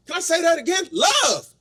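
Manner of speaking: very high voice, cracking and breaking. Giving a speech and repeating a word, voice cracking. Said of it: "My voice cracked a little bit there".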